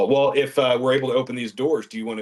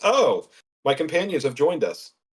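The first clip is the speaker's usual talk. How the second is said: high, squeaky, startled squeak of surprise; 5 semitones higher than usual. A narrator voices Gimbal looking around the corner at companions, Gimbal squeaking in surprise. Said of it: "kind of squeaks in surprise and says".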